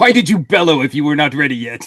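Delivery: thoroughly annoyed, exasperated tone. Quoting a favourite line of the character: imitating annoyed Strax. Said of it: "He's so annoyed".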